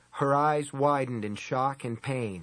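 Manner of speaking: ordinary delivery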